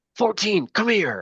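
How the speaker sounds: sharp, barking voice.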